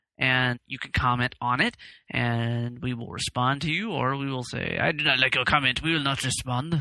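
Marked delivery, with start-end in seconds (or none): 4.8-6.8 put-on French accent. Joking about answering listener comments: put-on French accent like Pepe Le Pew. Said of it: "your French accent, Pepe Le Pew".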